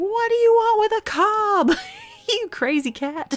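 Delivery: mock, very high, swooping words squeezed through hard laughter. Retelling chasing a cat with a corn cob: retelling laughing hard while talking. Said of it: "And I'm laughing so hard as I'm trying to get him".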